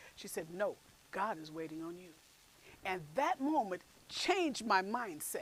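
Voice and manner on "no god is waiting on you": put-on stern voice, lower and quieter. Retelling what a colleague said when asked about waiting: imitating a stern reply. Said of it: "very sternly said".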